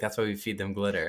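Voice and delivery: ordinary delivery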